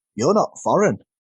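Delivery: ordinary talk, nothing marked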